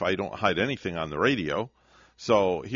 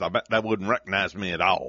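fake Southern drawl accent. Joking that listeners wouldn't recognize them: put-on southern accent. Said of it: "talking with a southern accent like this".

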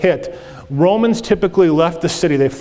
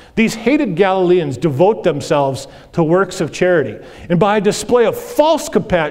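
normal talking voice

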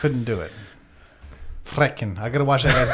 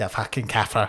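laughing put-on South African accent. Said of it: "Just a fucking accent you threw on it".

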